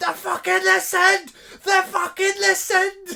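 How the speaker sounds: raw overjoyed screaming, loud, high and raspy. Retelling own reaction in the car: retelling screaming in the car. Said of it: "I'm in the car screaming".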